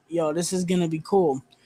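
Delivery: ordinary delivery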